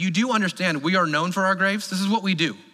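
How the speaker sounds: put-on sarcastic voice. Retelling what the people say about graves in Egypt: imitating sarcastic remark. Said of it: "how sarcastic of a statement that is".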